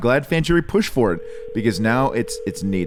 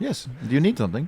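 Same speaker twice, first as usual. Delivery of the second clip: put-on Spanish accent, pitched up; 5 semitones higher, 4 dB quieter than usual. Playing a limo driver answering a passenger through the window: Spanish accent. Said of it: "You're the only one who can do a Spanish accent".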